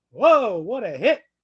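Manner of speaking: sudden, very loud, booming, drawn-out excited outburst. Imitating the call of a Lawrence Taylor hit, mock-excited Pat Summerall, octave up. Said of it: "move up an octave. ... Like that, that's what you were going to get out of Pat Summerall".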